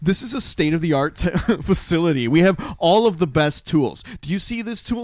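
mock furious, angry yelled rant. Retelling a movie scene where a doctor yells at a patient: imitating a doctor yelling. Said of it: "he starts yelling at her".

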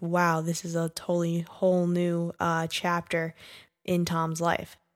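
ordinary talk

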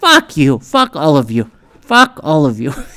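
plain

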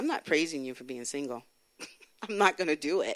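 stubborn, rebellious, defiant, dug-in tone. Speaker retells past words to the Lord, retelling rebellious defiance. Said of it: "I was rebellious".

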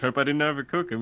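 fun, goofy, hammed-up put-on barbecue dad voice. Imitating an actor pictured as a fun dad cooking barbecue: goofy dad voice. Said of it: "he's the one cooking the barbecue, and he's just like".

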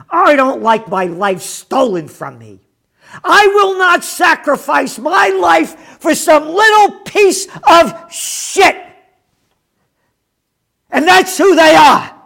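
loud, rising, furious angry rant. Ranting against officials who override religious exemptions: angry. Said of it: "you bet I am angry".

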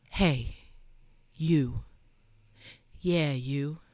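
put-on, really sultry come-hither tone. Retelling what the speaker said in a bathroom before a workout, put-on sultry voice. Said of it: "I just got this like really sultry voice going".

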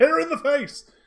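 shrill, very high, loud shout. Narrating a struggle, then voicing a character shouting: Garland shouting. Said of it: "you hear Garland from behind her just shout".

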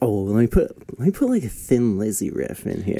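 ordinary delivery

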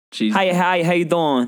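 put-on Brooklyn accent. Acting out a woman's greeting, in a Brooklynish accent. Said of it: "with like a Brooklynish accent".

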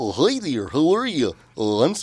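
swooping sing-song voice, pitch bouncing all over. Asked to demonstrate, the person who wore the costume does a Barney voice. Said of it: "let's hear it".

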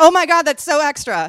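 loud, high, shocked theatrical shout.

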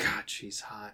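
very soft whispered mutter under the breath. In a role-play, reacting as a woman steps out of the shadows: muttered under breath. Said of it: "Under my breath".

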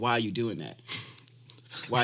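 plain

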